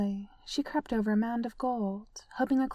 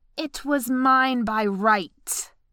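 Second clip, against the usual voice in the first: loud, slow, growling dragon voice; 7 dB louder than usual. Smaug the dragon answers the woman questioning him: growled. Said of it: "Smaug growled".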